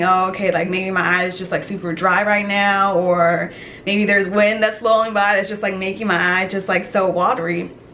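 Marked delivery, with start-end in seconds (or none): none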